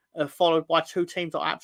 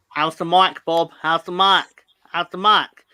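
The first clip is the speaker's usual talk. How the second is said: fake American accent, louder; 2 semitones higher, 9 dB louder than usual. Greeting a viewer who finally made a comment: put-on American accent. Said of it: "How's my American accent".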